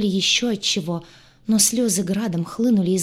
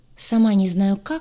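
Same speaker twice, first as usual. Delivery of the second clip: plain reading voice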